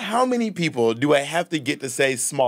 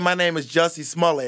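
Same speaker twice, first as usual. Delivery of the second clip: usual speaking voice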